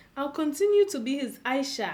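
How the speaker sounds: ordinary talk, nothing marked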